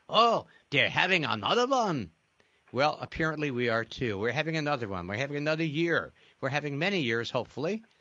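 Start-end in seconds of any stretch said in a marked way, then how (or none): 0.1-2.1 put-on Yiddish accent with perfect inflection. Retelling a teacher friend's answer when asked about next year: Yiddish inflection. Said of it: "he answered in that perfect Yiddish inflection".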